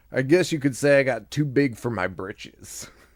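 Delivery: put-on Southern accent, storytelling voice. Retelling a story, the speaker quotes present-day Norman; Norman in a southern accent. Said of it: "I'm giving him a southern accent".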